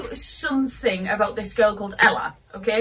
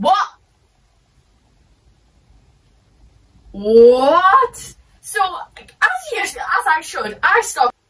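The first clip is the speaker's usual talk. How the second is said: angry outburst, pitched up and loud; 7 semitones higher, 5 dB louder than usual. Telling the story of Freddy Krueger saying he has a girlfriend, getting angry. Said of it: "I'm getting a bit too angry here".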